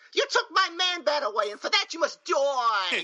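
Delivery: put-on very high, thick Brooklyn accent, stretched-out die. Praising a character's accent, quote her line in Francine's New York accent. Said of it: "is that a Jersey or a New York accent".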